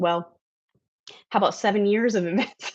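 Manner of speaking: words broken up by laughter, laughing through them. Speaker in conversation, laughing while talking. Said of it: "I'm sorry, I'm laughing".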